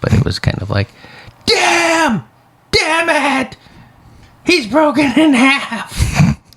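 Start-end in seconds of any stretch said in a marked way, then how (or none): 1.5-6.4 pitched very high and drawn out. Retelling how a fake profile's comment read: Jim Ross voice. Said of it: "I read it in his voice".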